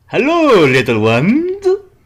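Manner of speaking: swooping vampire voice. Mocking a cardinal's sudden appearance to listeners, in a Count Dracula voice. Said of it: "Like Count Dracula".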